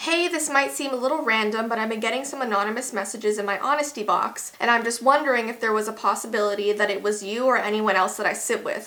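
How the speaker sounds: normal talking voice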